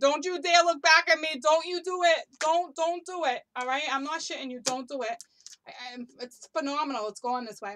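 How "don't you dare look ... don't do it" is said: very loud, high-pitched scream. Acting out a figure who is literally screaming: imitating someone screaming. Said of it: "he's literally screaming".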